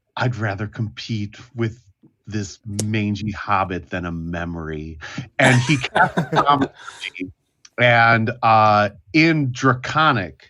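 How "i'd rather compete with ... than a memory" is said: soft mutter under the breath. Game player voicing the character Saul on his turn, Saul muttering under breath. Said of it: "mutters to himself under his breath".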